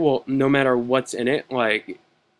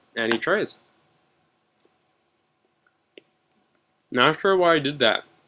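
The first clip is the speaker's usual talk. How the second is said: mouth full while talking, higher pitch; 2 semitones higher than usual. Player commenting on a card game move, talking while eating. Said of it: "Still eating a banana".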